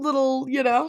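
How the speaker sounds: high, sugary, coaxing witch voice.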